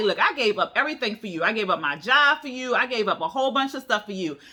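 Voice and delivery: mock mad, fed-up, heated scolding tone. Retelling a woman's words after she got up: imitating an angry woman. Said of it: "she gets up, she mad".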